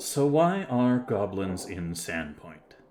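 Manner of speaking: grave, stern, serious, no-nonsense tone. Voicing the mayor as her smile turns serious: serious, stern tone. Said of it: "of a more serious tone".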